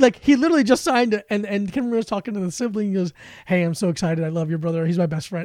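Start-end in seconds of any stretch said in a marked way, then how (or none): none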